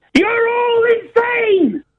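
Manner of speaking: very high, top-of-the-lungs, full-voice scream. A speaker urges the listeners to scream it along, screaming at the top of voice. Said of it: "scream it at the top of your voice now".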